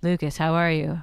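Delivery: flat, bland monotone with no lift. Imitating how the Outer Senshi from Sailor Moon talk: flat Outer Senshi monotone. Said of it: "the Outer Senshi talk like this".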